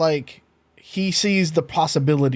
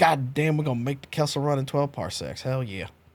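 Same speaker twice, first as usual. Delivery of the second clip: quiet aside, muttered under the breath; 3 semitones lower, 4 dB quieter than usual. Voicing a character who mutters to himself near a door: Galen muttering under his breath. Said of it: "you just kinda hear Galen under his breath go".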